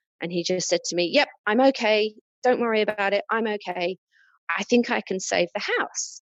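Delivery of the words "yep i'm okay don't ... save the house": mock keyed-up, agitated, heightened, pitched up. Retelling a phone call during a fire: imitating agitated, heightened speech. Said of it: "answered in a very agitated, sort of heightened state".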